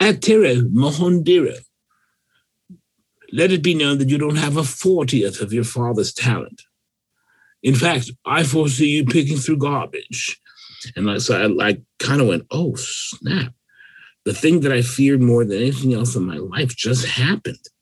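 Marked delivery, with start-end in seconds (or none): 0.0-10.4 fake English accent, pitched higher. Retelling a message left on an answering machine, fake English accent. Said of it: "a fake English accent".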